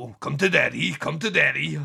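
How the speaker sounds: exaggerated, over-the-top American accent, drawn out. Retelling a film overdub: imitating an exaggerated American overdub. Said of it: "overdub him with the most American".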